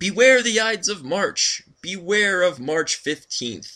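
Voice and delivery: frenzied, shrill, hysterical shouting cry. A narrator voices a man who draws nearer, then is shouting hysterically. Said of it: "You turn and see an old bearded man, draped in a cape, bearing a cane. It seems to be a soothsayer, / You turn and see an old bearded man, draped in a cape, bearing a cane. It seems to be a soothsayer".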